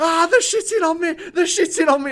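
shrill, high, panicked yelling at full volume. Retelling a story of a man caught among frenzied bats, retelling a panicked shout. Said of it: "he just starts shouting".

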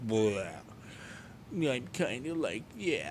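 sad, mopey, droopy, deflated cartoon-dog voice. Describing feeling low lately instead of upbeat, doing a Droopy Dog voice. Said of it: "Droopy dog".

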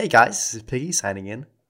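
put-on American accent, loud and slow. Acting out a podcast sign-off, answering another speaker: put-on American accent. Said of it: "Why are you doing American?".

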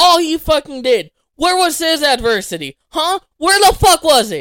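shouting at full volume, loud yelling rant. Arguing about a wrestling title win with another speaker: yelling. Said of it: "Are you done yelling in my ear?".

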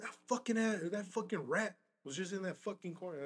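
loud, screaming rant.

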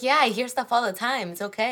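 reassuring, unbothered mom voice. Retelling what mom says about the ghost at home: imitating mom's voice. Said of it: "I love when you do your mom's voice".

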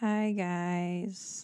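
half-hearted, low-energy, with "guys" drawn out. Greeting the audience at the start, unenthusiastic. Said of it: "that was so unenthusiastic".

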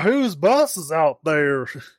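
put-on, dim-witted-sounding southern US accent. Acting out a small town Georgia sheriff, in Andy Griffith's southern idiot accent. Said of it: "Andy Griffith's southern idiot accent".

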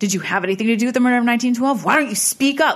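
mock pushy, confrontational, aggressive, loud, rising tone. Retelling how Zach asks a question during an EVP session, in a mock-aggressive Zach impression. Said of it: "he says it in his Zach way".

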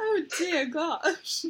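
put-on royal British voice. Exclaiming during a podcast chat, speaking like an old British monarch. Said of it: "Why am I speaking like I'm an old British monarch?".

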